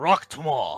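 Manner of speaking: shouting. Heading out the door, the orc answers the goodbye, yelling back. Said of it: "He yells back".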